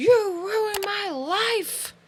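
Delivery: shrill, very high, drawn-out scream. Retelling how a man screamed over a crowd at her: imitating someone screaming. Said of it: "he just screams over the crowd".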